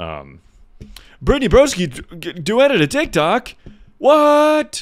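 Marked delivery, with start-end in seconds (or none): 1.2-4.8 high, loud, sarcastic fake shock. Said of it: "No, I'm being sarcastic".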